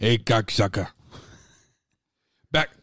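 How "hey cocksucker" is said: loud, cocky put-on voice. Doing an impression after another speaker asks for it: Joey Diaz impression. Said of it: "Do your Joey Diaz impression".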